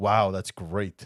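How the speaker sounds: put-on sarcastic tone. Acting out a phrase a woman says, number eight on a list: acted sarcastic tone. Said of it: "She's just being very sarcastic".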